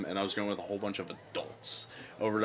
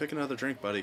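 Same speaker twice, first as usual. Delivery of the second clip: curt, pitched-up fake Irish accent; 5 semitones higher than usual. Retelling the reply to someone ordering an irish car bomb: put-on irish accent. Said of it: "He just stared at him and said".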